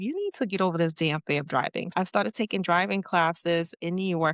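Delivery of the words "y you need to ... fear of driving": normal talking voice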